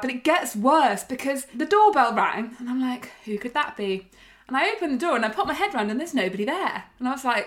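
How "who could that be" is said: ordinary talk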